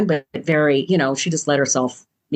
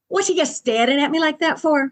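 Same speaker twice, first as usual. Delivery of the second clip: weak, clumsy put-on Scottish accent, very high-pitched; 12 semitones higher than usual. Retelling a conversation, act out the woman speaking to the man in a not very good scottish accent. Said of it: "I can't do a very good Scottish accent right now".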